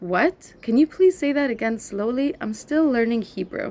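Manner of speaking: plain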